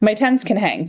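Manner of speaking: plain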